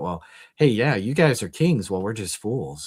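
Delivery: put-on sarcastic tone. Paraphrasing a letter to the Corinthians aloud: imitating a sarcastic tone. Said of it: "he is just dripping with sarcasm".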